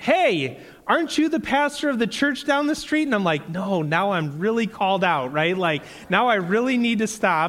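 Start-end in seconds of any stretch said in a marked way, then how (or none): 0.0-3.0 mock very high-pitched yell, as if from afar. Retelling how a guy yelled at the speaker again; retelling a yell. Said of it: "the guy yelled at me again".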